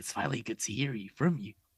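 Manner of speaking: creepy put-on voice. Retelling a prank call from Ghostface: Ghostface voice. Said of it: "he does that voice".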